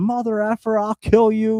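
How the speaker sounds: high-pitched scream. Telling of a homeless man yelling at passersby: retelling a man screaming. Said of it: "He's just screaming at everybody".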